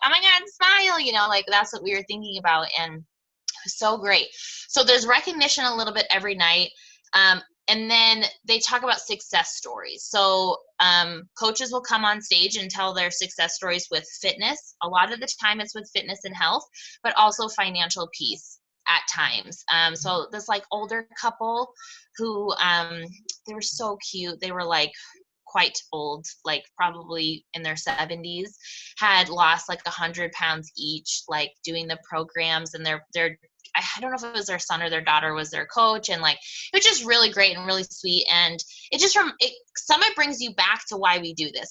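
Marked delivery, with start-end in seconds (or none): 0.0-1.0 high, loud, obnoxious, proud gush. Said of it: "like an obnoxious parent being like".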